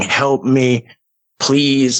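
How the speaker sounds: frantic, tearful screaming cry. Retelling being unable to get out or be heard, acting out frantic screaming. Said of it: "I'm screaming".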